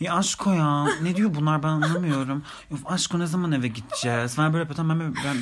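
put-on clueless ditzy airhead voice, sounding totally lost. Retell how Cansu acted while the police questioned you both, talking like Paris Hilton. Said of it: "o kadar böyle Paris Hilton konuşuyor ki".

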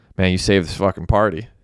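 ordinary delivery

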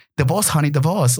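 put-on heavily laid-on, thick British accent. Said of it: "a really thick British accent".

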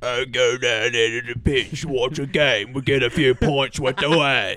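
put-on London Cockney accent. Trying out an accent that's hard to do without cussing, in a Cockney accent. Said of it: "Cockney's hard to do".

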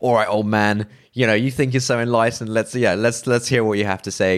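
brash, high, taunting tone. Acting out a brash student confronting a philosopher: imitating a brash young student. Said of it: "young, brash student who, like, goes to this philosopher's house, you know, guns blazing".

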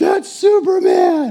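mock shrill, very loud, very high childlike exclaiming. Retelling watching Superman as a six-year-old kid: imitating his six-year-old self exclaiming. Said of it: "me as a six-year-old kid is like".

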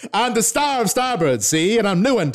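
put-on very high, loud mid-Atlantic accent. Voicing a character in a scene, in a transatlantic accent. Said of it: "a transatlantic accent".

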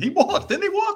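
mock screaming, very high-pitched. Recalling watching a play from the crow's nest above the court: retelling a scream. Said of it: "I started screaming".

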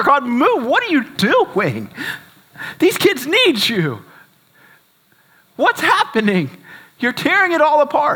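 acted, screamed pleading outcry with wild pitch swings. Retelling screaming at God in the car after leaving the kids, retelling a scream. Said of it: "I'm screaming in my car".

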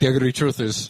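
put-on Scottish accent. Retelling what he started saying, thick scottish accent. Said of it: "in his thick Scottish accent".

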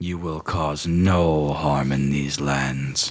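rumbling character voice. A game master voicing a character addressing the players, in a rumbling voice. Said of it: "kind of rumbles".

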